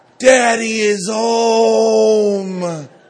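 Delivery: put-on high, loud, slow, excited child's cry.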